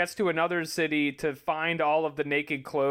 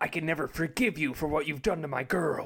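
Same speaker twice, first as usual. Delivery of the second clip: dead-serious, put-on heroic character voice. Doing a line from the show in the serious Goku voice. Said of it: "Goku turns on his serious voice, and he's like".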